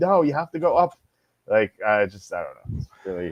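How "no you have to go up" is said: mock yelling, much higher. Recalling shouting advice at kids on a tv show, retelling a yell at the tv. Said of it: "I was always yelling at the TV like".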